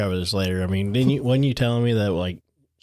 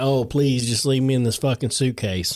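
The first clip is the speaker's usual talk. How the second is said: sarcastic mock begging voice; 3 semitones higher than usual. Mocking a dead child's supposed wish to stay in the suitcase: mock pleading as George. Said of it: "he's like".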